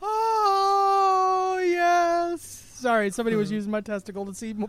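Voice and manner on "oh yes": very high, drawn-out ecstatic moan. Playing along with a co-host's absurd joke, Herbal Essences commercial moan. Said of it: "You went like full Herbal Essence commercial then".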